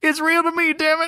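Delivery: very high, sobbing, bawling cry, acted out. Retelling a grown man at the mic talking to the wrestlers, imitating him bawling. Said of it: "he's bawling".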